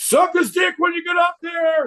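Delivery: high-pitched, loud, rowdy yell. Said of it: "we just yelled".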